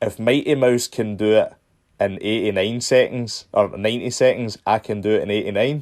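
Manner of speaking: normal talking voice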